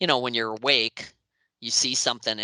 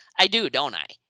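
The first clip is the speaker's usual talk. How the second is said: sassy, attitude-filled reply, pitched up; 5 semitones higher, 4 dB louder than usual. Retelling a dream where the mother answers a compliment: imitating mother's attitude. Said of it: "she, like, had this attitude".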